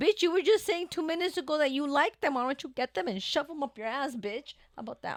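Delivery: put-on heated, worked-up angry outburst, high-pitched. Acting out a reply to a rude coworker: acting out an angry retort. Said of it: "You gotta calm down".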